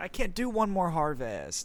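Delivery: high whining, every vowel dragged out. Mocking a film hero's complaining: imitating Luke Skywalker whining, stretched vowels. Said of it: "he's extending his vowels".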